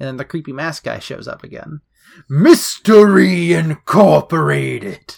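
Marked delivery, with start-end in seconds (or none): 2.3-5.1 loud, slow, big booming announcer voice. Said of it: "I imagine it in that booming voice".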